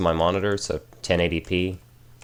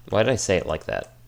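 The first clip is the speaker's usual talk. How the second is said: normal talking voice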